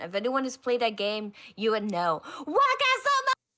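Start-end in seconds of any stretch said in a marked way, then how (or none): 2.4-3.3 very high, shrill, hard shout. Comparing a loud shouter in a queue to a game character: Sebek shout from Twisted Wonderland. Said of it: "He was like Sebek from, uh, Twisted Wonderland".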